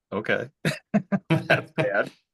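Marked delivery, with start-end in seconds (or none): 1.3-2.1 laughter breaking through speech. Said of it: "I shouldn't be laughing".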